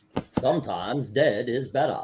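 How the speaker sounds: put-on Maine accent. Showing how they get the Maine accent: Maine accent. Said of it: "That's how I get the main accent".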